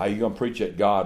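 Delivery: mock-nervous voice. Retelling what a fellow asked him, imitating a nervous fellow. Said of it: "Like he was all nervous".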